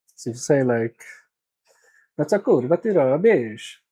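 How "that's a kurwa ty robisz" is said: attempted Italian accent in Polish, slower. Testing how Polish sounds with an Italian accent, speaking Polish with an Italian accent. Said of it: "Polish actually works with an Italian accent".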